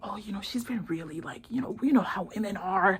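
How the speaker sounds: whispered, sly, confiding tone.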